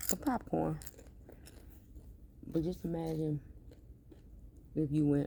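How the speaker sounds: chewing while talking. Eating popcorn for the nostalgia of the movies, talking while chewing. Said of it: "I'm sorry for chewing".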